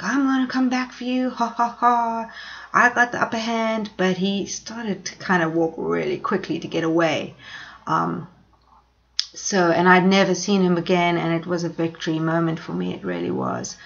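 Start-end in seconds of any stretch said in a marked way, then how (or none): 0.0-3.9 threatening shouted taunt with a jeering laugh. Retelling what a fleeing attacker shouted back: imitating a man shouting taunts. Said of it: "He kept on shouting back slurs at me".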